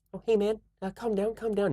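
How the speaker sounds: put-on girly New Zealand accent, very high pitched. Retelling a scene, you act out the big pile of bricks in a girly New Zealand voice. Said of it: "that most girly uh, like New Zealand voice".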